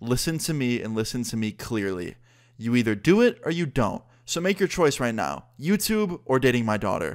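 put-on angry voice. Retelling what the girlfriend's dad demanded: imitating an angry dad. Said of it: "he gets all red in the face, all pissed off looking".

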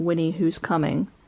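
plain

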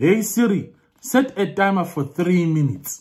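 high Zimbabwean accent. Trying different accents on a voice assistant, now a Zimbabwean accent. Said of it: "I'm going to do a Zimbabwean accent".

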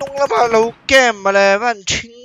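loud, high-pitched yelling.

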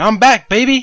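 booming, very loud, high, belted cartoon shout. Looking for a sample, quoting the line: Bender impression. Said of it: "Bender where he's like".

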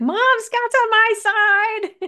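put-on very high, very slow, drawn-out childish scream. Retelling calling to mom from the back seat: retelling own screaming.

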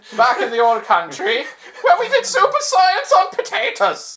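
very high, hammy put-on Irish brogue. Playing a super scientist character, in an irish accent. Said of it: "that's the Irish super scientist bit".

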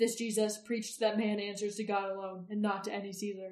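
ordinary delivery, nothing marked

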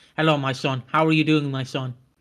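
fake god-like voice. Acting out God greeting a son: God greeting someone. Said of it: "He's like".

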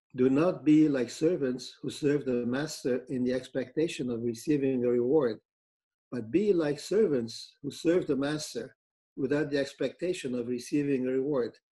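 plain

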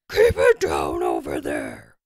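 loud, howling, roaring, swooping bellow. Narrator voicing a shout toward the crashing next door, bellowing. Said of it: "Mashiro bellowed".

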